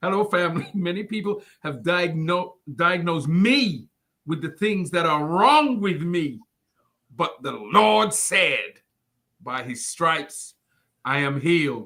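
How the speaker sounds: slow, low, deliberate, every word spaced. Rereading a brother's message aloud to the family: speaking slowly. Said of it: "Let me say this slowly".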